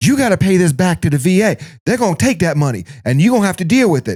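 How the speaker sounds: high, screaming, scolding rant. Retelling a lady on the phone screaming at them: imitating someone screaming. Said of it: "She's literally screaming at me".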